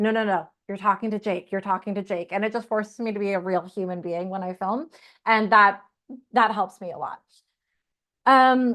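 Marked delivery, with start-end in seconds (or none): none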